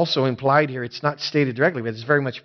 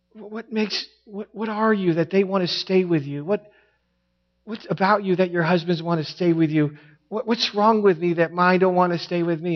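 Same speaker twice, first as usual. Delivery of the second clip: put-on heart-wrenching, sad pleading tone; 4 semitones higher than usual. Retelling what a woman said about wives and their husbands, retelling heart-wrenching words. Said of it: "it was heart-wrenching to hear".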